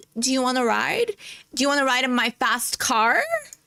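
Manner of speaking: play-acted high, sweetly laid-on flirtatious voice. Reacting to a video, imitating the woman: imitating her flirting. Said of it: "She's like".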